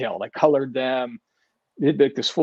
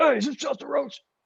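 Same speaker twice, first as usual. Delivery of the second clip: gruff, rough voice at very high pitch; 13 semitones higher than usual. Retelling Joe's first phone call to the speaker, imitating Joe's gruff voice. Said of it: "real like like gruff voice".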